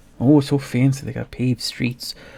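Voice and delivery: dry, faintly superior, slightly condescending sarcastic tone. Acting out how he talks about the town: mock-condescending sarcastic tone. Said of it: "He says it in a slightly condescending tone, like he's talking about the town sarcastically".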